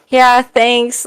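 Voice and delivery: defeated, resigned tone. Retelling an answer given at the end of a show: imitating own defeated reply. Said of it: "you sounded so defeated".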